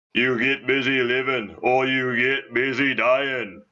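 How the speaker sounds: very deep, low, slow delivery. Showing another speaker how to do it: Morgan Freeman impression. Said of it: "This is Morgan Freeman".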